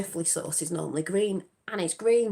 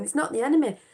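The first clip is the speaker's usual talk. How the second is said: put-on, high, near-tearful voice; 7 semitones higher, 4 dB louder than usual. Retelling a film scene where a girl pleads: imitating someone nearly crying. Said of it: "nearly crying".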